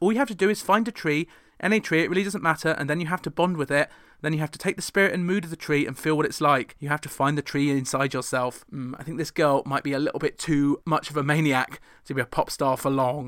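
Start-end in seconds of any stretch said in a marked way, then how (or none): none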